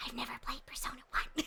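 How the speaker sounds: hushed, breathy, hush-hush whisper. Showing how the voice sometimes drops: hushed whisper demo. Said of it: "whispers and, like, a hush hush".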